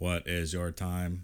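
slow, flat, mechanical robotic monotone. Repeating a question that was asked numerous times, in a robot voice. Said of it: "do you think it sounded like a robot voice? ... Kind of like that?".

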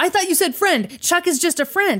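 high-pitched, panicked voice. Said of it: "Enrique was panicked".

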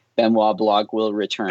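ordinary delivery

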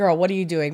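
ordinary delivery

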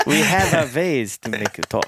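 put-on German accent throughout. Taking turns trying accents in a group: put-on german accent. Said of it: "See, that's German".

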